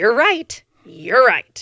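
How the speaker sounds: put-on cutting sarcasm. Retelling a partner's hurtful reply: imitating a cutting sarcastic tone. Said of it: "he would use his sarcastic, very, like, knife to the heart".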